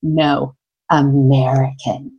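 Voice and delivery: low voice laced with the deepest disdain. Retelling a woman's reply about the speaker: imitating deep disdain. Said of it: "with the most deep disdain".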